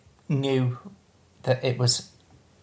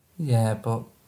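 disappointed, let down; 2 semitones lower than usual. Answering that they watched something good, sounding disappointed. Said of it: "You sound so disappointed".

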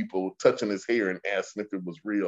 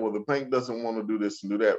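usual speaking voice

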